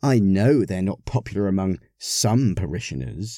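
plain reading voice

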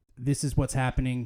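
ordinary talk, nothing marked

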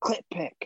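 loud, carrying stage whisper. Retelling what a lady in the audience said: imitating a loud whisper. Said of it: "She whispered it, like, super loud to her friend".

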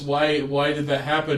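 usual speaking voice

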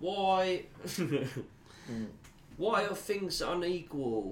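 high, whiny, most annoying British voice.

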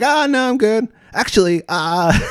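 very high, slow, drawn-out little dude voice. Retelling a first meeting at a bottle shop: imitating the little dude's voice. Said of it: "Is that his voice too?".

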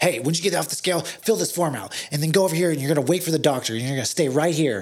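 put-on woman's screaming voice. Retelling what a weigh-in staff worker said: imitating a woman screaming orders. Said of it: "stop screaming at everybody".

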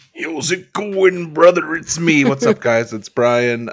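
loud, slow, high, stretched-out wrestling announcer voice. Greeting listeners after being introduced as co-host: Macho Man voice. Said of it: "I did a little bit of Macho Man".

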